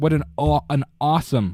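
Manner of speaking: "awesome" in a New York accent. Praising the opening title card of a movie: New York accent. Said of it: "I sound like I'm from New York".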